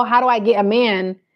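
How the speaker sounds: ordinary talk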